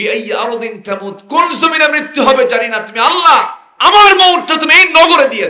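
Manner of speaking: crying out high and loud.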